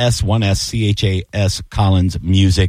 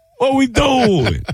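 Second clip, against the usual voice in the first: fake Italian accent, very high pitched. Joking after being told he turned them into Italians: put-on Italian accent. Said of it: "That's not my go-to voice usually".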